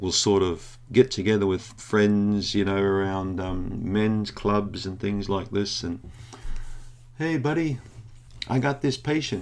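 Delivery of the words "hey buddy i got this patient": put-on, pitched-up, casual American accent. Retelling men chatting with friends at clubs, in an American accent. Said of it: "I'm just using an American accent".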